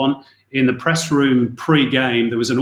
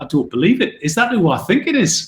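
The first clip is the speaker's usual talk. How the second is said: put-on Geordie accent, pitched up; 6 semitones higher than usual. Retelling a surreal moment, quote your co-commentator in John Murray's Geordie accent. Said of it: "said in his Geordie accent".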